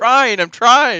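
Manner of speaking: very loud, very high, very slow, drawn-out yell. Retelling how a man at a rally answered: imitating someone shouting. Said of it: "all of a sudden he shouts out".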